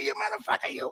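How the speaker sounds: breathless, whispered gangster voice, squeezed out on little air. Long-winded and struggling to catch a breath, break into a Joe Pesci voice, out of air. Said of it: "talking like Joe Pesci because I'm running out of air".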